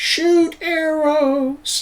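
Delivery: high, slow, far-off yell. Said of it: "you can hear just the wind".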